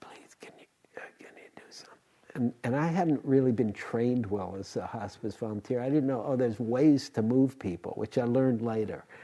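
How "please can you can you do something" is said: fast, barely audible whisper. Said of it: "He was just barely whispering".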